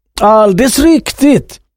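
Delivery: cheerful, glad, lively burst. The shipowner confirms what the other man just said: exclaiming gladly. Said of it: "utbrast redaren glatt".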